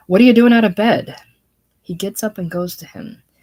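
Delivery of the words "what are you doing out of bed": very loud, rushed, chiding scolding tone. Reading a play, one man finds another out of bed against the doctor's orders: scolding.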